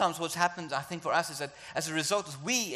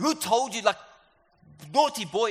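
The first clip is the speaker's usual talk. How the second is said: high, loud, scolding shout; 6 semitones higher, 7 dB louder than usual. A preacher shows a kind of shouting the Father does not do: scolding shout. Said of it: "it's not just like shouting like".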